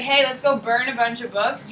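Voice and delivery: ordinary talk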